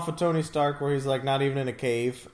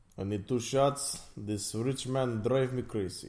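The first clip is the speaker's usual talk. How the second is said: fake put-on Russian accent; 3 semitones lower, 6 dB quieter than usual. Discussing an Iron Man movie, riffing in a put-on Russian accent. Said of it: "Welcome to Moscow".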